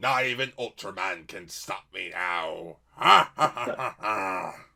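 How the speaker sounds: eighties cartoon villain, deep, booming, gloating, evil laugh. Voicing the monster Trongar: eighties cartoon villain voice. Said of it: "sounds like, like, an eighties cartoon villain".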